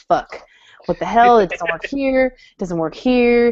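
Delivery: mock exasperated, frustrated outburst. Retelling a character who tries a key in every door: imitating a frustrated character. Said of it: "he's literally like".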